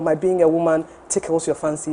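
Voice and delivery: ordinary talk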